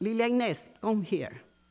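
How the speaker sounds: plain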